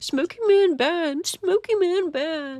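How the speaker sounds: very high, slow, dopey, dim-witted stupid voice. Mimicking a man who mocks any mention of smoking being bad, in a put-on stupid voice. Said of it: "He does, like, the stupid voice".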